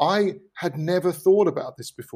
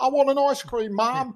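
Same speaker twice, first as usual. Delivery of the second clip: put-on high, drawn-out little kid pleading voice; 9 semitones higher than usual. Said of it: "they all leap out of their house like".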